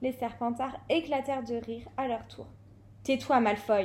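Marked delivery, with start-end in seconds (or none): 3.0-3.9 sharp tone, lower and louder. A student tells another student to be quiet as the Slytherins laugh; said sharply. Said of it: "lança sèchement".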